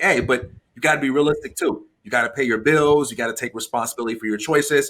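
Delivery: ordinary delivery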